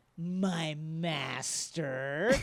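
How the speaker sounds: put-on wry, ironic tone. Praising a character's delivery to the Emperor, with a mock-ironic 'my master'. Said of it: "with just the right drizzling of".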